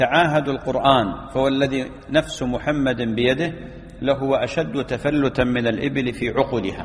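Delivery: normal talking voice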